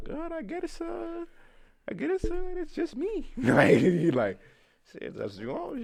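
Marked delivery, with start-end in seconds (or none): 0.0-3.3 very high, slow, put-on German accent. Retelling a night with a friend, quoting a woman in a little German accent. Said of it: "in her little uh German accent".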